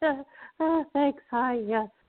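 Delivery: play-acted, very high, giggly, awkward, nervous voice. Retelling how she answered a man's compliments: imitating own awkward giggle. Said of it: "you'd awkwardly laugh, you know, you kinda giggle, you go".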